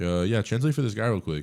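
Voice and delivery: ordinary talk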